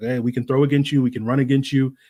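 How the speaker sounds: plain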